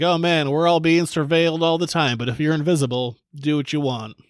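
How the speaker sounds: ordinary talk, nothing marked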